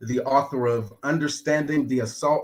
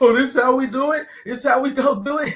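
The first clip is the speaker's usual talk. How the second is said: shrill, very high-pitched yelling; 12 semitones higher, 6 dB louder than usual. Retelling a moment when someone was smacked and yelled back: imitating someone yelling. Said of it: "He was just sitting there yelling like".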